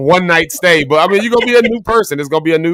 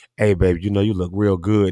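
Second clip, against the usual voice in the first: mock sweet talk, lower and quieter; 9 semitones lower, 5 dB quieter than usual. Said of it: "when you like 'em, it's like".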